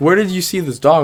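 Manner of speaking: ordinary talk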